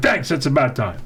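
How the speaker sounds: ordinary delivery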